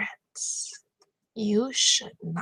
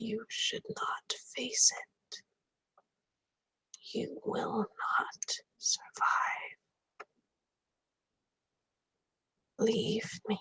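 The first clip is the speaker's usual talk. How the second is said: faint, hushed whisper; 6 dB quieter than usual. A character reaches a feeble hand to another's ankle and speaks: whispering. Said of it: "the voice carries to your ear like a whisper".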